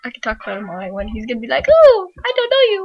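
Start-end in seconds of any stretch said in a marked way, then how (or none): 1.7-2.9 very high, very loud squeaky voice. Acting out how Paul would react, high-voiced Paul impression. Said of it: "would Paul have a really high voice?".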